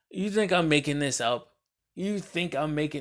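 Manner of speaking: light, amused, good-natured delivery. Retelling confronting someone who denied it, retold words with a big smile. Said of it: "I'm saying this with the biggest smile".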